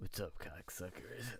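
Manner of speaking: rough, gravelly, rowdy comedian-style voice. Greeting the others, trying Joey Diaz's gravelly voice. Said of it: "I can't do his gravelly voice".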